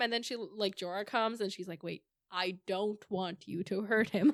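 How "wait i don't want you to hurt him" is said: mock firm, commanding, no-nonsense voice. Retelling a scene where Daenerys stops Jorah: imitating a firm tone. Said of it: "more in, like, a firm tone".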